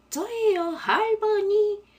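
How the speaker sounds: pitched way up, bright tone. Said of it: "소녀의 목소리를 흉내내며 말했어요".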